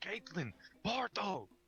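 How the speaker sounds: full-volume, booming, high-pitched huge shout. In a tabletop game, a character magically amplifies his voice to call companions, shouting. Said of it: "3 times louder than normal and shouts".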